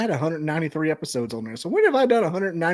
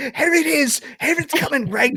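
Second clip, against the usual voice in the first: put-on screaming, higher; 10 semitones higher than usual. Retelling how Adam kept screaming during a film scene: imitating Adam screaming. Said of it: "Adam kept screaming".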